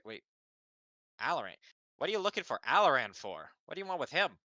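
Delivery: startled, surprised voice with high rising pitch. Voicing a character who looks up as someone approaches: surprised questioning NPC. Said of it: "he sorta looks up and is like".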